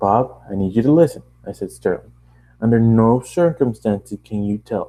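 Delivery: plain reading voice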